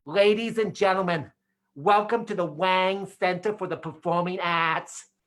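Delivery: put-on announcer voice with a strong Boston accent. Speaker retells a welcome announcement at a performing arts center, in a Boston accent. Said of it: "it was a Boston accent".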